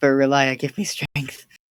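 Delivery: hushed whisper. A player in a tabletop game speaks in character, whispering. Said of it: "I'm gonna whisper".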